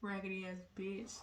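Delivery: muttered under the breath. Retelling what someone said right after friendly small talk, muttered under the breath. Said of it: "just real under the breath base".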